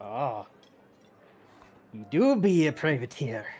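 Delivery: put-on drunken old man talk. Voicing the barkeep greeting a newcomer: drunken barkeep speech. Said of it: "his, um, drunken speak".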